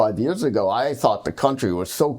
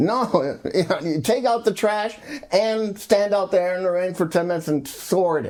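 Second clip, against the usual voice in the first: high-pitched, mean, bossy nagging voice; 8 semitones higher than usual. Comparing garbage sorting rules to a nagging spouse: imitating a nasty wife. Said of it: "like a nasty wife saying to you".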